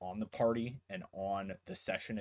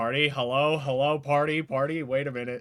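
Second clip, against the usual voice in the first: put-on shouting, higher and louder; 5 semitones higher, 11 dB louder than usual. Retelling calling out to the group while muted: imitating own shouting. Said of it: "shouting at you guys".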